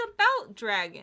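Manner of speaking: very loud, shouted yell. Arguing over whether a book cover counts as a dragon, yelling. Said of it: "Did you have to yell that?".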